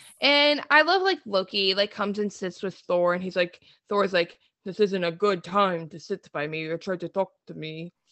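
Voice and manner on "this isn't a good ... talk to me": low, soft, quiet, machine-like robotic voice. Retelling Thor's line to Loki, in a Terminator voice. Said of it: "That really did sound like the terminator".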